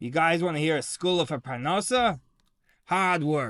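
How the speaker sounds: put-on very raspy, rasping old man voice. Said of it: "He had a very raspy voice".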